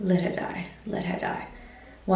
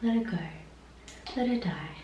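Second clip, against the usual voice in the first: play-acted soft, gentle, sympathetic tone; 3 semitones higher, 6 dB quieter than usual. Recounting a dream, imitating voices in it with a sympathetic voice. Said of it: "with like a sympathetic".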